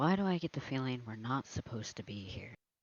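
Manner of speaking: low, hushed, wary voice. Player character glances around and speaks to a companion; lowered voice. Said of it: "lower his voice to Caw".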